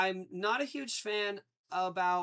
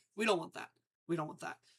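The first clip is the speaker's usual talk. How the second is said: usual speaking voice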